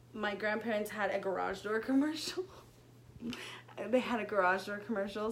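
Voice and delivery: fighting off giggles, stifled laugh under the words. Telling a group of listeners a story from high school, holding back a laugh. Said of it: "Sorry, I'm trying not to laugh".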